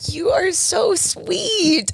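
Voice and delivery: tearful, very high, choked-up crying voice. Responding to a co-worker's farewell tribute, choked up and crying. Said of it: "I am crying".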